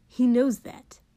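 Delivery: obstinate. A narrator reads Kotsky's reply to Mina, stubborn. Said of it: "Kotsky said stubbornly".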